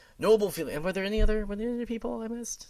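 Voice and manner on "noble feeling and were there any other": ordinary delivery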